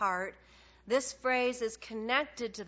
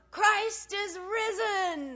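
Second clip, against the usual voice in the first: mock shouted, very high, drawn out and rising; 9 semitones higher than usual. Telling of a man called up before a silent audience, retelling his yell. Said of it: "he yells out".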